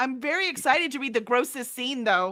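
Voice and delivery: loud, sarcastic, fake excitement. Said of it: "That was sarcasm".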